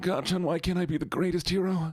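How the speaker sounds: high-pitched anime hero voice. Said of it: "You sound like Deku".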